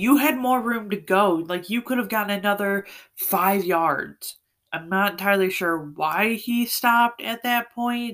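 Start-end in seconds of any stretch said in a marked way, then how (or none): 0.0-4.4 acted-out mock yelling. Telling how a player ran out of bounds too early: retelling a yell at the TV. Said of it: "I'm yelling at the TV".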